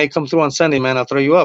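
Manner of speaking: usual speaking voice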